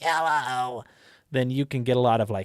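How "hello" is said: character voice placed high at the back of the throat. Explaining voices for goblins and kobolds, the speaker demos talking from the top back of the throat. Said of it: "talk like kind of top back of the throat".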